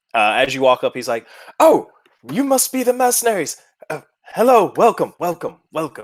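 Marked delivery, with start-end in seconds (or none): 1.5-6.0 put-on very high, swooping, chatty, friendly old man voice. Narrating a scene, voicing an old man welcoming the mercenaries, friendly old man voice. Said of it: "he is an older human".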